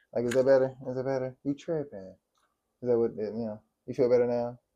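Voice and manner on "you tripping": soft, sugar-coated, overly nice, fake-gentle delivery. Repeating a point in a nicer tone, as if to calm someone: mock gentle tone. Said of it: "'Cause I'm not yelling at you?".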